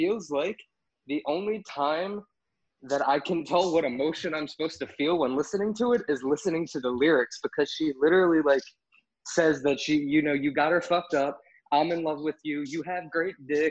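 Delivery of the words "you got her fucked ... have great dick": usual speaking voice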